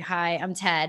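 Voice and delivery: ordinary talk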